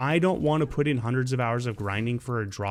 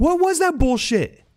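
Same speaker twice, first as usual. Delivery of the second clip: very high, very loud panicked outburst; 8 dB louder than usual. A gamer reacts to a boss behaving strangely, freaking out. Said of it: "Sorry, I'm freaking out".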